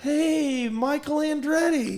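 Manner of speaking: put-on very high, loud, slurred tipsy voice. Retelling greeting a racing legend in a parking lot: imitating own drunken slur. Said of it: "that probably drunken slur".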